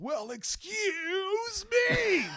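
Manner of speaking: shrill, very high, drawn-out top-of-lungs yell. Telling how the assistant superintendent's son jumped on a table, retelling a shout at top of lungs. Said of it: "at the top of his lungs goes".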